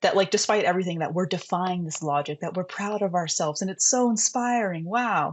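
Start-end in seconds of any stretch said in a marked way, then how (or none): 3.6-5.3 high, drawn-out, put-on sarcastic awe. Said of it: "That is sarcasm".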